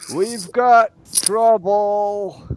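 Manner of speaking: shrill, loud, far-carrying high yell, trouble drawn out. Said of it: "And then I'll yell".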